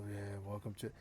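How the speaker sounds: put-on weary voice. Showing how a low-energy streamer sounds: imitating a tired-sounding streamer. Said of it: "you sound tired all the time".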